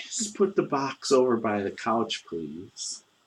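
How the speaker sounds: gentle, soft-spoken, quiet voice. Narrating a scene, voicing an unseen speaker behind the listener, soft-spoken voice. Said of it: "you hear a soft spoken voice".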